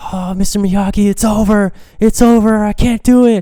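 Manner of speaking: mock very high, loud, panicky giving-up cry. Retelling a scene at the side of a ring, the speaker imitates someone panicking. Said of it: "He's all panicky and everything".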